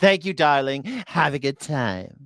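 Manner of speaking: sassy, teasing little diva voice. Mocking the president's sign-off from a clip: mocking a sassy tone. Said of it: "He's just like a sassy little".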